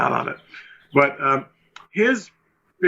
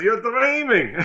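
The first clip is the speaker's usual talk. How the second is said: high-pitched, amused, dismissive, tossed-off tone; 8 semitones higher than usual. Retelling a film producer's laughing dismissal: imitating Menachem. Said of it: "It's a good impression of him".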